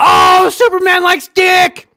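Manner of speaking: very high, very loud, drawn-out shriek. Retelling own reaction to a comic panel: retelling own scream. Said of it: "I couldn't help but scream".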